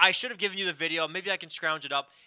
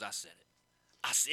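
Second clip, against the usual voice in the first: emphatic sports pundit tone, lower and quieter; 7 semitones lower, 7 dB quieter than usual. Retelling a sports pundit's on-air prediction: imitating Stephen A Smith's tone. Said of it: "you know how he has, like, that tone?".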